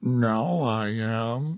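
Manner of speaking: growly, gruff voice. Reading a story aloud, a character answers: growly voice. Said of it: "said a growly voice".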